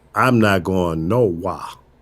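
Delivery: put-on South Florida accent. Quoting an old friend, the speaker does Andre Egliston's South Florida accent. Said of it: "with his South Florida accent".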